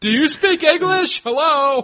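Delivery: very high-pitched, very loud, shrill American voice. Recalling how they acted while abroad: mock ignorant american tourist. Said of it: "the more ignorant and stereotypically American we acted".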